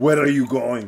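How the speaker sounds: put-on heavy Greek accent, laid on thick. Quoting his Greek dad when he was heading out, in a thick Greek accent. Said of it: "so with his thick accent".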